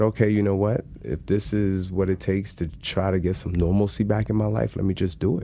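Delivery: ordinary delivery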